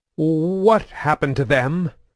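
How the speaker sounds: high, stuttering, trembling, quavering voice. Narrator reads the co-pilot's question on seeing two dead soldiers, stuttering, trembling voice. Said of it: "he said in a stuttering, trembling voice".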